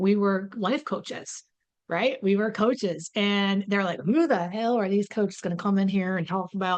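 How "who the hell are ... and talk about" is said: fast, skeptical, put-on Southern accent. Speaker retells how skeptics reacted to them as life coaches; put-on Southern accent. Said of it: "They became Southern all of a sudden".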